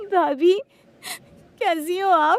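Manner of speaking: loud, tearful speech. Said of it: "तुम रो रही हो?".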